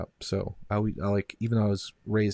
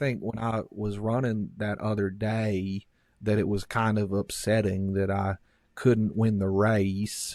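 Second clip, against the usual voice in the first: put-on Southern accent. Speaker showing how people do a Southern accent, as Forrest Gump. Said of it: "do it like that".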